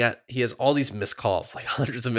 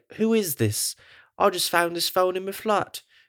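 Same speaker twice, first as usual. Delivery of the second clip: strange, odd put-on accent, pitched up; 7 semitones higher than usual. Retelling a phone call, quoting a character: character's weird accent. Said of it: "Why are you doing that weird accent?".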